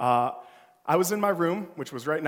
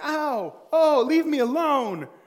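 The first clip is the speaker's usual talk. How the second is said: very high, long-drawn-out shout; 12 semitones higher, 6 dB louder than usual. Retelling how the sister shouted from her room: imitating sister shouting.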